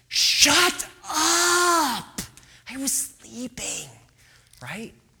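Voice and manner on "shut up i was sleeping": high-pitched, very slow, drawn-out frustrated angry yell. Acting out being woken from sleep, in a mock angry frustrated yell. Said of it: "sort of like anger and frustration".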